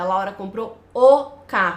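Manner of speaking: article o punched, stressed before carro. Explaining meaning through intonation, with stress on the article o. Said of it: "principalmente com essa entonação, dando a ênfase para o artigo definido".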